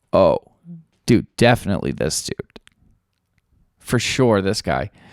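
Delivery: play-acted tongue-in-cheek certainty, sarcastic. Retelling what [name] said on the street: sarcastic retelling of a quote. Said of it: "I just said it, like, sarcastically".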